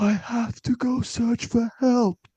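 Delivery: play-acted soft, sedated whisper, very high, slow. Describing a film character explaining he must leave, imitating a soft tranquilized voice. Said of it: "like he just got shot with a tranquilizer voice".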